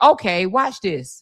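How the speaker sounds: put-on calm delivery. Retelling a woman's reply in a shooting case: imitating a calm delivery. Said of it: "She was so calmly said".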